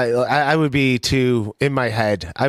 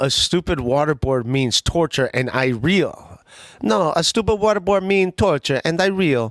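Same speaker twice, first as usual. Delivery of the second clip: put-on Italian accent; 4 semitones higher than usual. Quoting a line twice, in a put-on Italian accent. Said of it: "They're doing this in Italian accent".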